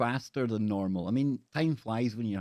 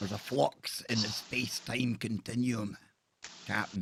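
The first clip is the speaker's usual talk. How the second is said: put-on Scottish accent; 4 dB quieter than usual. A co-host tries doing the Scottish accent again during a chat: Scottish accent. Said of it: "do the Scottish accent again".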